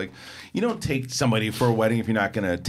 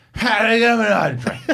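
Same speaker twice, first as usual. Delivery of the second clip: put-on drunk slurring, higher and louder; 12 semitones higher, 7 dB louder than usual. Retelling how a drunk friend asked the bartender for a drink: imitating a drunk friend. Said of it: "he's sloshed".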